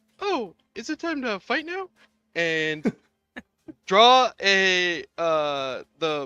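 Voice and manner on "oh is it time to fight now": tiny, very high little character voice. Narrating a scene, giving a character's line: small put-on character voice. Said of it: "in his little voice that I can't do".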